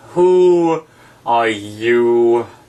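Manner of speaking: drowsy, languid, sleepy voice with "you" drawn out. Reading aloud, the Caterpillar first addresses Alice: languid, sleepy Caterpillar voice. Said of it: "addressed her in a languid, sleepy voice".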